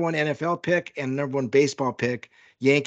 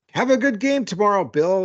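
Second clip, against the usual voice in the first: high, patronizing, condescending shout; 6 semitones higher, 4 dB louder than usual. Retelling how a brother yelled at a player after a concert: imitating a condescending yell. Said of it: "in a very, like, condescending way".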